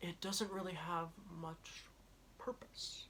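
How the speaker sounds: breathy, whispered put-on voice. Rating a film, then saying a line as an Agent Smith impression. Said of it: "That was my best Agent Smith impression".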